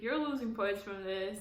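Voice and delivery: normal talking voice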